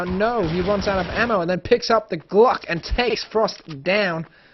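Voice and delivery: American accent. Commentating a shooter match round, in an American accent. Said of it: "that was an American accent just hitting you there".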